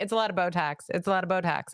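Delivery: normal talking voice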